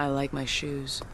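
play-acted low, slow, flat deadpan with no emotion. Recapping a movie scene, a character replies to another: deadpan Aeon Flux line.

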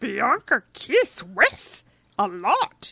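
loud monster voice, each word drawn out big. Recapping a scene where she doubles down on dirty talk; Bianca's monster voice. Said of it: "in her monster voice".

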